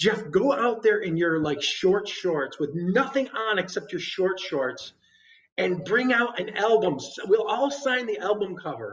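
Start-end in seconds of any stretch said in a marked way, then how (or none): none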